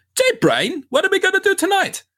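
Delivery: very high-pitched, swooping, bouncy cartoon voice. Copying the whole intro of the show: Pinky voice. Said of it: "copy, like, the whole intro to it".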